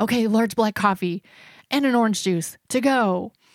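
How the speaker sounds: put-on terrified, panicky voice in sheer terror. Retelling what he said to the lady while ordering, acting out own terror. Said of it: "just in terror".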